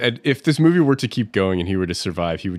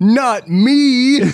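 shrill, very loud, high-pitched yell; 14 semitones higher, 7 dB louder than usual. Recapping a film scene, the speaker acts out a character's line: retelling a yell. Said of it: "Julia yells".

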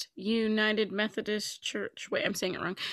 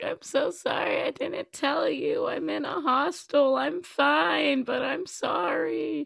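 crying, high and very slow, "sorry" slow, "fine" stretched; 6 semitones higher than usual. Retelling a late-night call apologising for not telling: retelling own tearful apology. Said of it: "Why are you, like, crying?".

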